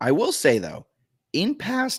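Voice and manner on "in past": very high voice, cracking and breaking. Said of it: "that was a nice voice crack".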